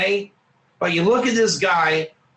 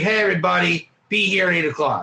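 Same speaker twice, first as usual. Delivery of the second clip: unfriendly, nasty, not-nice tone; 4 semitones higher than usual. Describing a man who was not nice, imitating Moshe. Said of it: "his voice would be like".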